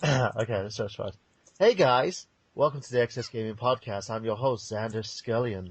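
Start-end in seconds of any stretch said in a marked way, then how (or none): 1.6-5.7 put-on American accent. Trying an American accent on a podcast intro: American accent like Xander. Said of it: "if I actually do my American accent, it sounds like I'm talking like Xander".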